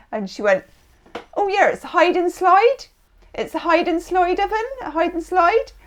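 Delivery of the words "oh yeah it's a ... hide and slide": put-on accent from Devon. Retelling what a showroom saleswoman said about an oven: imitating a Devon accent. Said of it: "she had this Devon accent".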